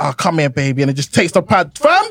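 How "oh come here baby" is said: put-on intimate pillow-talk voice. Telling how she distracts him during his FIFA game; imitating her pillow talk voice. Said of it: "She puts on that pillow talk voice".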